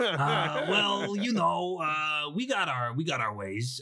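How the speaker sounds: slow, shady, evasive penguin character voice. Voicing a penguin who answers the player: sketchy penguin voice. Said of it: "you made 'em pretty, pretty sketchy".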